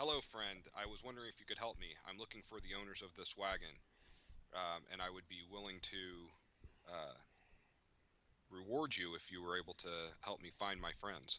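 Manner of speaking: winning, sweet-talking, very persuasive tone. Asking a vendor in character for help finding friends: most persuasive tone. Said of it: "ask in my most persuasive tone".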